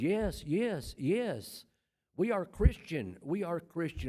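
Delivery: put-on slow, loud shout at top of lungs. Retelling answering a distant questioner across a campus: retelling a shout at the top of lungs. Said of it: "at the top of my lungs".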